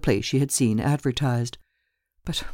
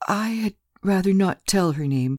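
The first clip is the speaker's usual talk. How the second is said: shy, meek, timid, pitched-up voice; 5 semitones higher than usual. A woman declines to give the landlady her former lodger's name, timid. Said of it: "with a timid air".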